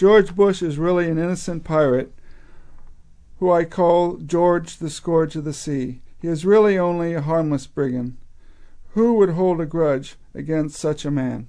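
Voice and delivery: ordinary talk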